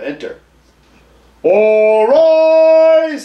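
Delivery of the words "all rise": very high, loud howl, rise stretched. Reading a courtroom scene aloud, voicing the bailiff: howling. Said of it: "howls the bailiff".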